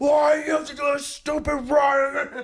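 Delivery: put-on high, furious complaining rant, "run" stretched out. Retelling being stuck behind road closures on a Sunday: imitating his own angry yelling. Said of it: "fucking so angry".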